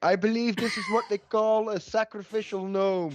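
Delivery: very high shouted call. Voicing an elf calling over to another character: shouting across. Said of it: "shouts over to Zalmaran".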